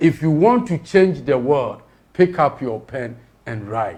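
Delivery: ordinary talk, nothing marked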